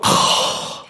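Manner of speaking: rising, crying groans. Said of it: "kids don't go".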